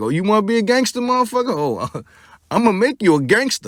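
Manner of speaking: put-on taunting sarcasm. Acting out how Suge gave it to him: imitating Suge, sarcastic. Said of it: "He gave it to him like".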